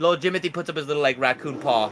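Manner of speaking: ordinary talk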